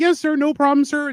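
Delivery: sweetened, high, friendly customer-service phone voice. Reenacting talking to people on the phone: put-on higher, friendlier voice. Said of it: "I make my voice higher pitched to sound friendlier to people".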